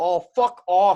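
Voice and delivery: very loud, high, screamed outburst. Retelling how his buddy screamed at two cops on the boardwalk, retelling a scream. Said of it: "he just screamed".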